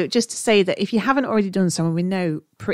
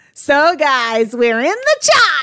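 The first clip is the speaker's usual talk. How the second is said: British voice in loud, swooping fake American accent; 9 semitones higher, 7 dB louder than usual. Told to stop being British, the speaker talks in a put-on American accent. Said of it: "So put that filter through an American voice".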